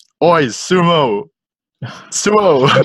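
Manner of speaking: mock drunk, high-pitched jeering voice. Retelling a stroll past people calling out: imitating drunk people. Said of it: "these drunk people".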